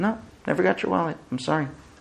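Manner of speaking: quick, quiet, dismissive brushing-off mutter.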